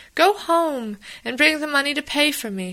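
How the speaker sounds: high-pitched voice, crying out loudly. A sister speaks to her brother in his boat, crying out. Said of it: "she cried".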